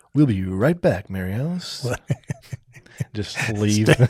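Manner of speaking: small on-air radio DJ announcer voice. Told to try it during arguments, addressing his wife in a little radio voice. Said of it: "a little radio voice on her".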